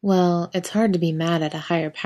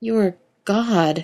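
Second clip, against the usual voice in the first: dazed, stunned tone; 3 semitones higher, 3 dB louder than usual. Sam answers Castiel after he speaks, in a dazed voice. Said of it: "Sam says dazedly".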